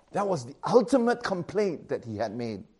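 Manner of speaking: normal talking voice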